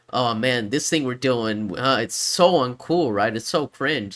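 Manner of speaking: plain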